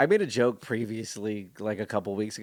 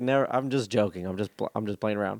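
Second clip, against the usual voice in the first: plain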